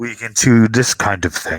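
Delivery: hollow, echoey voice like through tin cans. Retelling what a figure says after forming into a face, echoey tin-can voice. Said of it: "echoey kind of like talking through cans along a string kind of voice".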